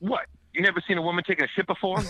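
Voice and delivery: mock very high, accosting, confrontational tone. Retelling what a woman snapped at him after he apologized: retelling an accosting retort. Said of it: "Like immediately accosts me".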